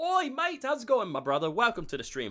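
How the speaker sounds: loud, high put-on Australian accent. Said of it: "Australian accent".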